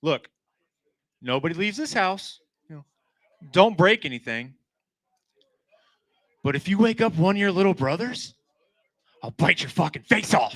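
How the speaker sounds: play-acted, deliberately calm and controlled menace. Retelling warning the boys while wearing a dinosaur mask: retelling a forced calm warning. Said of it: "as calmly as I possibly can".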